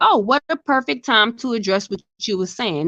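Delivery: ordinary talk, nothing marked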